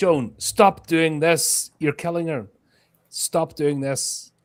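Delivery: loud, high-pitched screaming. Screaming at a ghost to stop hurting someone: screaming at joan. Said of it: "I'll scream at Joan".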